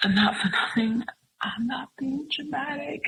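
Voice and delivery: high, tearful, upset crying voice. Retelling what they answered when told to calm down, imitating past self crying. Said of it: "And I was crying and I was just so upset".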